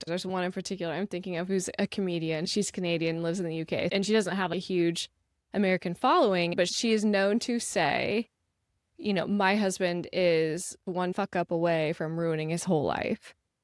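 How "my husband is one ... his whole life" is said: usual speaking voice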